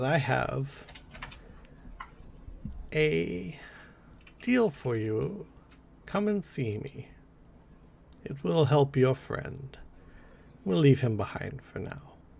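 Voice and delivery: put-on soft, hushed old hag's voice. Game master voices the hag calling out to a waking player character, in a hag voice. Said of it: "the hag voice calls and she says".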